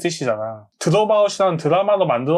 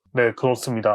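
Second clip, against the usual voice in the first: forced, put-on deep, low bass voice; 6 semitones lower than usual. Describing someone who wasn't low-voiced but spoke low: put-on low, deep voice. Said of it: "저음으로".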